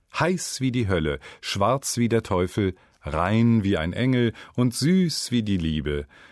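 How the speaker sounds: usual speaking voice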